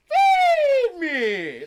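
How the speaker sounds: very high, very loud, wild, swooping falsetto shriek. A performer shows how he plays Audrey II, in a crazy falsetto. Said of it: "Falsetto crazy".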